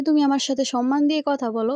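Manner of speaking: ordinary delivery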